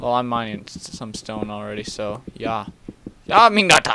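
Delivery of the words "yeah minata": put-on slight German accent, pitched up. Mining stone in a game and calling out: German accent. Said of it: "You like my German there?".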